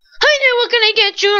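blaring loudspeaker style, very high and very loud. Retelling how the woman taking a car order sounded, imitating a very loud voice. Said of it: "she came off so loud".

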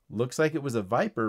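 ordinary delivery

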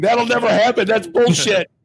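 mock, very high-pitched, shrill yelling. Speaker recalls pointing at a sign and yelling at their wife: retelling a yell. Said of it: "I'm like yelling at my wife going".

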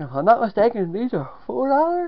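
talking through a yawn. Quoting bag prices on video, yawning mid-sentence. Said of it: "Sorry for that yawn there".

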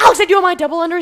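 shrill, very loud, high-pitched yell. Retelling how they yelled at Alex over their double unders, re-enacting the yell. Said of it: "I'm yelling at Alex".

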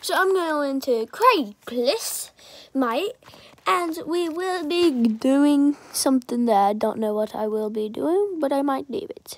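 casually done, fake British accent. Talking to viewers in a video; put-on accent. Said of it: "Don't know why I'm speaking in this accent".

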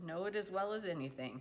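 ordinary delivery

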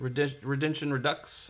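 ordinary delivery

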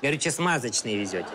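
put-on Georgian-accented speech.

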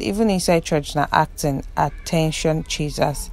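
ordinary delivery

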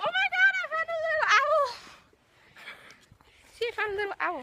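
shrill, very high, excited shouting. Telling a companion she found a little owl, shouting. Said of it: "you're just shouting".

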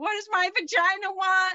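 put-on yelling. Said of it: "yelling into the space next to you".

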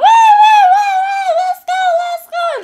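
very high, loud, eager, excited hollering. Describing their dog going crazy before walks; voicing Xena yelling excitedly. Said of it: "She's like yelling like".

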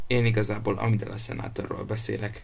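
ordinary delivery

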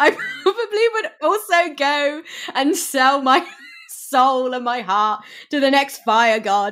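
talking through laughter. Talking about a story's relationship with a listener, laughing through the line.

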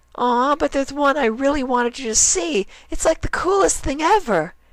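excited, eager cry, very high pitch. Reading a story aloud, one character answers another, crying out excitedly. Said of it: "she cried".

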